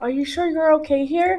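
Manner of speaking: hushed voice under the breath. A woman speaking to Kisi about her being here, in a lowered hushed voice. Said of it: "she lowers her voice".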